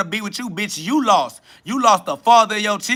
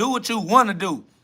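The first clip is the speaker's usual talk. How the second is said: normal talking voice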